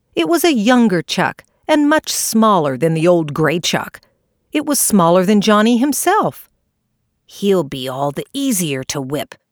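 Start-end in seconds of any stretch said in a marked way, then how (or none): 7.3-9.3 low, cross, angry muttering under the breath. Seeing the opponent is smaller, a character mutters while setting off again. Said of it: "muttered Johnny".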